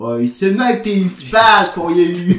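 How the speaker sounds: very high, loud, shrill squealing voice. Imagine him reading a stop-smoking book by himself, and do it as an Alan Carr impression. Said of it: "That's my Alan Carr impression".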